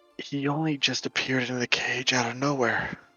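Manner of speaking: hushed whisper. A game master voices a woman who pulls the player away from the group: whispering. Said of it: "she whispers to you".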